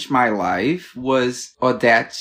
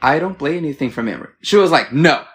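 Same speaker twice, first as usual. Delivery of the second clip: ordinary delivery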